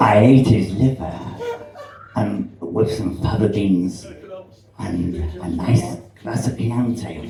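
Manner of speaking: very low, quiet, hushed, menacing killer voice. Performer doing a series of impressions, Hannibal Lecter impression. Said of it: "people love the Hannibal Lector impression".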